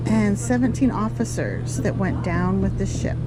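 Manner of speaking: ordinary talk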